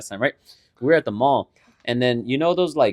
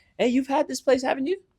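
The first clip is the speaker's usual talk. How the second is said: very high, casual, breezy, friendly nonchalant tone; 12 semitones higher than usual. Retelling how a friend casually brought up a smoothie place: imitating a nonchalant friendly tone. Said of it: "all fucking nonchalant, all friendly and shit".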